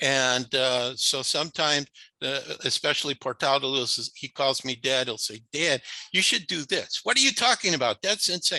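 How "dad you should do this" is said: put-on Yiddish-inflected accent.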